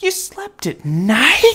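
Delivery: very high-pitched, drawn-out gasp. Narrator reads a bat in the crowd reacting to Stella Luna's story, gasping. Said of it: "gasped another".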